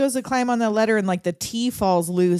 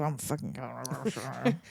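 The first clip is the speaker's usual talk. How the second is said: very low, very quiet under-the-breath mutter; 8 semitones lower, 12 dB quieter than usual. Retelling a movie character walking off on a ledge: imitating someone muttering. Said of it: "muttering to himself".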